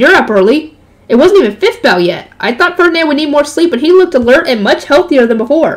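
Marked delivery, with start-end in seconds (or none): none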